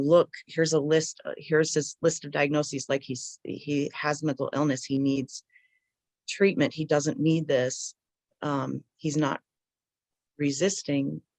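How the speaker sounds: ordinary talk, nothing marked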